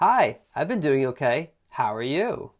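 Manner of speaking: heavily sarcastic, swooping sing-song delivery. Reading a sample read-aloud line from a test: sarcastic. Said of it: "you don't have to sound so sarcastic like I do".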